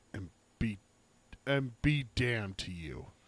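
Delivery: low, quiet, dropped voice. Narrating Roland's parting line before they mount up, in a lowered voice. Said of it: "lowers his voice and says".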